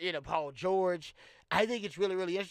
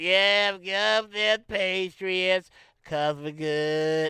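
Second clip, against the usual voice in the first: put-on drunk slurring, getting louder; 8 dB louder than usual. Retelling how an owner sounds at speeches: imitating Robert Kraft's slurred speech. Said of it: "he's slurred".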